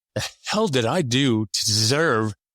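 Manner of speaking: ordinary talk, nothing marked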